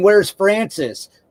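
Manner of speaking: acted yelling. Retelling a movie scene where a character yells: imitating someone yelling. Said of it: "he's yelling".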